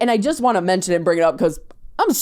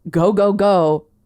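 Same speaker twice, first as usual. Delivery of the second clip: urgent, driving tone. Retelling running into an American school to play a joke, imitating a scream.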